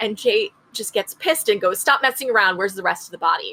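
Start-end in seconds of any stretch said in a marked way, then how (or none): none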